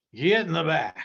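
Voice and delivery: loud, barking cowboy voice. Telling how Burt ordered you into the glider: best John Wayne impression. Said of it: "is in his best John Wayne".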